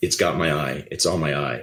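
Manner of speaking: urgent, panicked fear held just under the surface. A parent on a walk retelling the daughter's words, imitating daughter's panic. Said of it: "I hear this panic in my daughter's voice".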